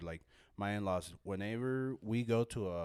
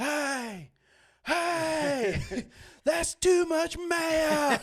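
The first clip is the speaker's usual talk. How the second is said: very high, very loud, slow yell, "hey" stretched long; 9 dB louder than usual. Retelling how a customer at a fast food counter yelled at a kid: imitating a man yelling. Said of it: "start yelling at this kid".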